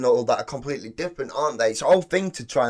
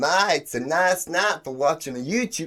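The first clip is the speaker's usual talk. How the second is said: slow, tentative attempted Southern accent; 4 semitones higher than usual. Repeating the practice line after the teacher: attempted Southern accent. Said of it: "I don't know why I'm copying".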